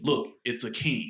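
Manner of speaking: normal talking voice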